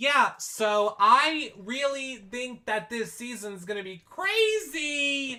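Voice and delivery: very high, slow, unhurried, drawn-out voice. Retelling Britney's preseason interview answer: Britney impression. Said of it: "she would be like".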